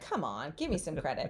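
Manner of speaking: play-acted, unimpressed, dismissive brush-off. Retelling own past reply to a question: imitating own eye-rolling remark. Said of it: "rolled my eyes like".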